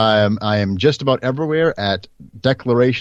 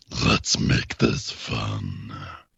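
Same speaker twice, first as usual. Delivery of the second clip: hushed, breathy, very slow whisper, "fun" stretched out; 9 dB quieter than usual. Performing a game line after being asked: Warwick voice. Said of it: "what's his other one?".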